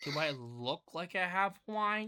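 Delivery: slow, annoyed, put-upon, irritated tone. Imagining a woman's reply when asked if she has wine: mock-irritated voice. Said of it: "She says in an irritated irritated voice".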